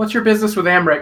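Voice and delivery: insistent, pressing tone. Voicing Edmund questioning a stranger: demanding tone. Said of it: "Edmund says in a demanding tone".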